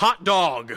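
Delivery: acted, very angry, loud, clearly spoken furious shout. Retelling a clear voice heard while waiting, imitating a very angry voice. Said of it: "but very angrily".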